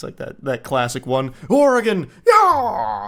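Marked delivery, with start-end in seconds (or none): 1.5-3.1 very high, swooping, excited whooping yell, screaming. Joking about a famous scream, doing the Howard Dean scream. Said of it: "the Dean scream".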